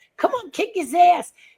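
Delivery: imitated childish yell. Retelling watching wrestling as a child, imitating own past yelling. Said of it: "I would start yelling".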